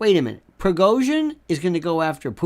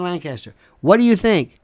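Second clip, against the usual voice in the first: ordinary talk, nothing marked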